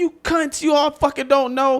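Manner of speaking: high, sneering, mocking voice. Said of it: "comedy fans is like".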